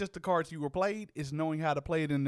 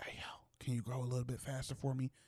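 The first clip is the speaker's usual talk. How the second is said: soft whisper. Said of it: "whisper and be like".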